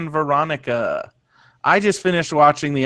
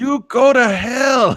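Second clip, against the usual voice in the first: put-on bad Russian accent, higher pitch; 8 semitones higher, 3 dB louder than usual. Quoting a character's weak line in her Russian accent: imitating Lana's Russian accent. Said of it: "Lana's Russian accent".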